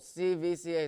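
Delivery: voice cracking mid-phrase on C V C A. Giving his game picks on his last slide, voice cracking. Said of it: "sorry for the voice crack".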